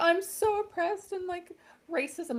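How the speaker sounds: tearful, very high, drawn-out sobbing voice. Mocking a public figure's complaints: imitating Meghan Markle crying. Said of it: "She's horrendous and crying like".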